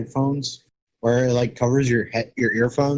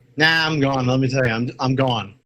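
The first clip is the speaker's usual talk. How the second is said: usual speaking voice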